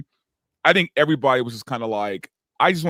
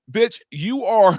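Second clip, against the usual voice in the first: yelling, higher and louder; 9 semitones higher, 5 dB louder than usual. Retelling watching a scene on TV: imitating yelling at the TV. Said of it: "I was yelling at the T V".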